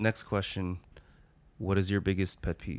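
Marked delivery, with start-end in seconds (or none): 1.6-2.8 grave and confiding, serious, intimate tone. Asking the next question in a serious, intimate tone. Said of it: "Because I want to make it very like serious and like intimate".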